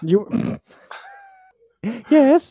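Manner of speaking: put-on very high, swooping old-country milkmaid accent. Speaking in an old-country milkmaid accent, just before being asked about it. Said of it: "Why do you sound like a milkmaid from the old country?".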